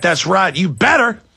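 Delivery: play-acted arrogant, smug, cocky, lordly approving tone. Telling a story, the speaker quotes the pimp; imitating an arrogant pimp. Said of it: "the pimp comes in all arrogantly".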